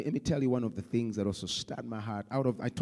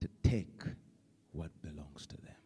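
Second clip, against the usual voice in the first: put-on sad voice, lower and quieter; 8 semitones lower, 7 dB quieter than usual. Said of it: "in a sad voice".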